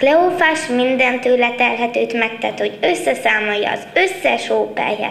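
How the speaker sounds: plain reading voice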